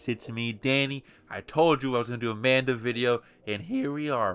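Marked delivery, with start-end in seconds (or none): 1.3-4.3 cracking, breaking voice. Opening a video for viewers, the host speaks with a voice cracking. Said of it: "My voice cracked".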